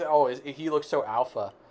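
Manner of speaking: ordinary delivery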